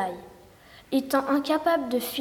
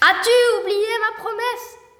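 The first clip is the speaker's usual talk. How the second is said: very high, raised, furious outburst; 10 semitones higher, 7 dB louder than usual. Narrator voices the little man appearing before the queen, very angry. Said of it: "Il était très en colère".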